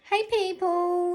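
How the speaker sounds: very high, loud whining voice. Opening greeting to listeners, in a whiny voice. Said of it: "that was a very whiny voice".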